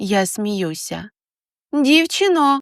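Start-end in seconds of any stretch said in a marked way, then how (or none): 1.7-2.6 loud, high-pitched calling out. Reading a story aloud, the narrator calls across to a woman: calling out loudly. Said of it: "вигукую так, щоб вона мене почула".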